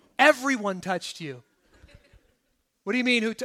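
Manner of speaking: mock sarcastic tone. Retelling the disciples' reply to Jesus' question: imitating sarcastic disciples.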